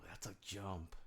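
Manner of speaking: soft, slow, shocked whisper.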